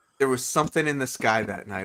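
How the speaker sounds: usual speaking voice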